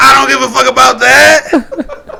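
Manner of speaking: raspy, furious yell, very loud and high-pitched. Repeating the line on request, redoing own angry shout. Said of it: "You can make that voice again".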